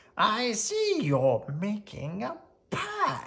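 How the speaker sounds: put-on high, rasping, gravelly old crone voice. Reading a fairy tale: the disguised hag speaks through the window, gravelly hag voice. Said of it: "the hag said in a gravelly voice".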